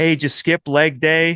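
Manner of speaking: put-on high Boston accent, loud. Imitating guys heckling an outfielder at a ballgame, loud Boston accent. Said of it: "in this loud Boston accent".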